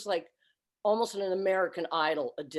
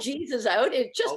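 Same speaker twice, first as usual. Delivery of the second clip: crying, tearful, pitched-up speech; 5 semitones higher than usual. Recalling a moment that moved them to tears every time, crying while talking. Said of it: "I'm crying now".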